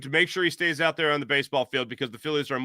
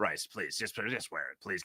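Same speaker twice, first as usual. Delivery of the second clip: put-on murmur, very deep, very quiet, hushed; 8 semitones lower, 13 dB quieter than usual. Acting out John Middleton in a story: John Middleton impression. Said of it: "That was my incredible impression of John".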